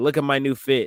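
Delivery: ordinary talk, nothing marked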